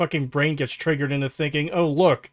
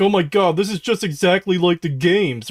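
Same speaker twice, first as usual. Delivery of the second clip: mocking, clueless, brainless-sounding voice; 3 semitones higher, 4 dB louder than usual. Retelling what clueless fans say about the show: mocking imitation of clueless fans. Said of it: "brainless people who don't know anything about the, the games being like".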